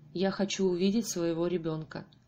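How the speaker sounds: ordinary delivery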